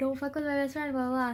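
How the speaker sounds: usual speaking voice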